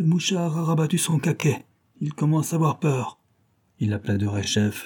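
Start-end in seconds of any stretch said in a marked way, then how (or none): 0.0-3.2 high, jeering, scornful, mocking voice. A man taunts the silent informer in the next cell, mocking.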